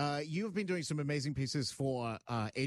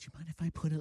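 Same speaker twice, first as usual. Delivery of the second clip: careful, delicate, tentative stage whisper. Retelling how a makeup artist asked before applying makeup: imitating someone whispering. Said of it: "she whispered it like I was gonna be offended".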